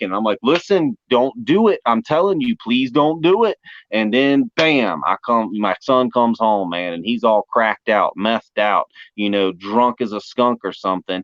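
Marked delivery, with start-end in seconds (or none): 0.4-3.4 put-on stern tone, higher. Acting out warning own kids against drugs: acting out a sterner warning. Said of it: "get a little sterner".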